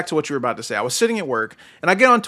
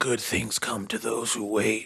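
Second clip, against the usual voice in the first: raspy, rasping voice; 8 semitones lower, 10 dB quieter than usual. Retelling a wrestling office scene: raspy Triple H voice. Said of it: "in that raspy ass voice".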